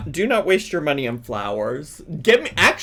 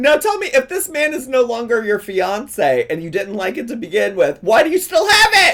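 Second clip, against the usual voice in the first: loud, pitched-up yell; 6 semitones higher, 5 dB louder than usual. Confronting another speaker with a repeated question, yelling. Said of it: "I'm sorry for yelling".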